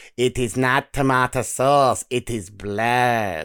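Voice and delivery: put-on very slow vampire accent, "blood" stretched out. Retelling what a mum dressed as a vampire said to the speaker, in vampire accent. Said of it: "She did it in the accent".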